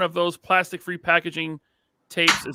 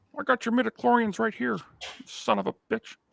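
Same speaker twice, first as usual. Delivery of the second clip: creaky put-on voice, a little high-pitched; 5 semitones higher, 6 dB quieter than usual. Speaker, told he sounds like George Lucas, does a George Lucas impression. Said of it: "told I sound like George Lucas".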